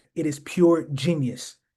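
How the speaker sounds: genius stressed, drawn out slow and heavy. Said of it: "Emphasis on genius".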